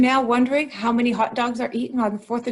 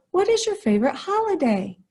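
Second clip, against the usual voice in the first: rising intonation climbing up on holiday; 6 semitones higher than usual. Teaching when to use a question mark, the speaker demonstrates rising question intonation. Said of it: "You hear my voice go up at the end?".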